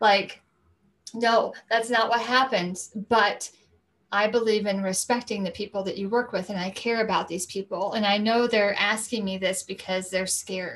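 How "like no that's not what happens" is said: choked up, tearful, crying while talking. Telling a story that always moves them, the speaker is crying while talking. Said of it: "I'm crying now".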